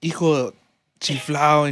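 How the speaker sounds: strong Mexican accent. Showing how the phrase should be said: said really Mexican. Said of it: "you gotta say it really Mexican".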